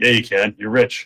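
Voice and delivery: ordinary delivery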